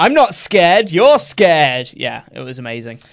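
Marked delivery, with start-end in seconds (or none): 0.0-1.9 put-on cocky wrestler voice, higher and louder. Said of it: "then he goes back to being really cocky".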